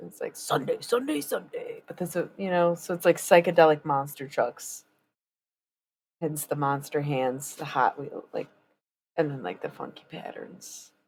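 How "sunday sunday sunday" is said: hushed whisper in promo announcer voice. Recalling teenage Sundays with friends, the speaker does the Monster Jam commercial voice. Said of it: "we would imitate the voice from the Monster Jam convention commercials".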